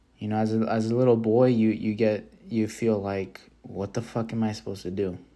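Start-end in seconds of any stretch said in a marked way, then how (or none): none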